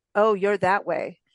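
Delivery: ordinary delivery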